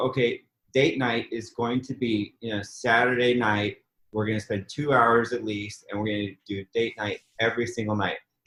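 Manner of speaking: ordinary talk, nothing marked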